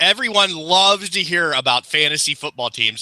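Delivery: heavy, open sarcasm with feigned interest. Responding to another speaker's fantasy football news: sarcastic. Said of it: "I am being so sarcastic right now".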